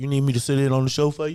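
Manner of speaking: put-on deep voice. Speaker imitates a kid who has grown up: imitating a deeper voice. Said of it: "his voice is already deeper".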